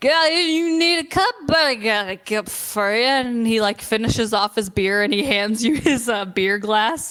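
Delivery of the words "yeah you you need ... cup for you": put-on higher-pitched, boozy, drunken dwarf character voice. Voicing a drunken dwarf who hands a player his beer glass: drunken dwarf voice. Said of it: "a drunken dwarf that passes by, and, uh, and he's like".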